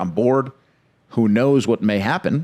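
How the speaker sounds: ordinary talk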